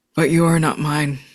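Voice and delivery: monstrous, reverberating, echoing monster voice. Recapping a scene where a character in altered form speaks, monstrous, reverberating voice. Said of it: "In a monstrous, reverberating voice".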